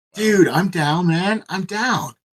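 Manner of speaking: high, very slow, laid-back bro drawl.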